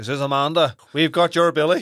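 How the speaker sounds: put-on Northern Irish accent. Recalling teenage prank phone calls with friends: put-on Northern Irish accent. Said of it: "we put on an Northern Ireland accent".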